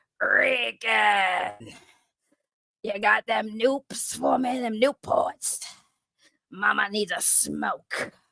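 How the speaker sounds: very slow, put-on raspy voice. Speaker tries a voice she says someone else does better: put-on raspy voice. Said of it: "maybe if I sounded more like that ... that actual raspy voice".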